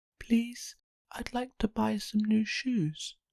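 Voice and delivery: very quiet, soft, small voice. Narrator reading a story as Little Miss Shy asks at the shoe shop, very quiet voice. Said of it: "in a very quiet voice".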